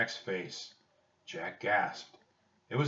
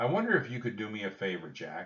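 plain

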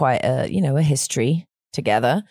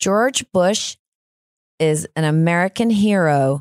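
slow, careful, fake American accent; 2 semitones higher than usual. Reading a test sentence someone wrote years ago: put-on American accent. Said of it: "my American, and it was, all right, I'll try and do it".

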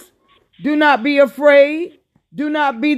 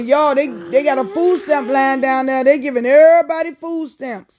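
plain

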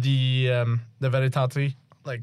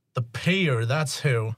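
annoyed, irritated voice. Game master voicing a contact answering the crew over the comms, annoyed voice. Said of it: "a rather annoyed voice".

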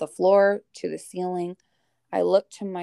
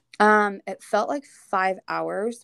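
usual speaking voice

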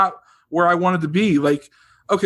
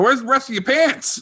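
put-on high-pitched hollering; 7 semitones higher than usual. Reminiscing with a friend about the friend's dad, imitating a dad yelling. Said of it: "your dad used to yell at me".

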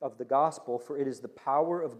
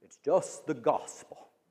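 slow, unpolished evangelist preacher voice. Retelling a preacher's reply after a crusade: Billy Graham impression. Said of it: "I don't do a great Billy Graham impersonation".

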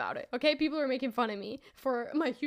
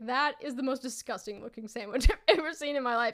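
ordinary delivery

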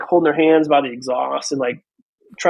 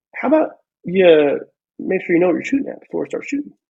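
put-on, super calm voice; 3 semitones higher than usual. Retelling a sergeant major questioning a lieutenant about his shooting, imitating Sergeant Major Watson, super calm. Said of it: "super calm, super mellow".

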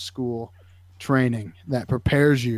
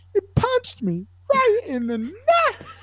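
very high, swooping, pained cartoon-character squeal. Quoting what he said after getting hit, in a very high cartoon-like voice. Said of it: "like a cartoon character is hitting this octave".

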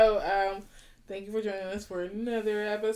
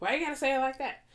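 high, fast mocking voice. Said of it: "Corey is always like".

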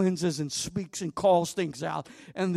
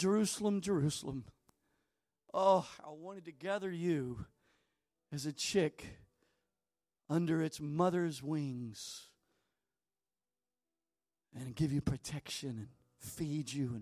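mock words choked out through tearful weeping; 2 semitones lower, 8 dB quieter than usual. Retelling the words spoken before the crucifixion, looking down at the temple; retelling speech while weeping. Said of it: "and he wept".

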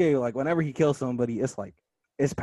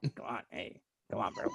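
put-on strung-out voice, lower, quieter; 4 semitones lower, 14 dB quieter than usual. Acting out how Yasuke was voiced, doing Yasuke in a crackhead voice. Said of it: "I gave him the crackhead voice".

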